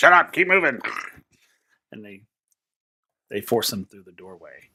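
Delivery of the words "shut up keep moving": high, barking, snapping goblin voice. A game master voices goblin guards marching a prisoner through a dungeon, in goblin voice. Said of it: "You hear some goblins coming".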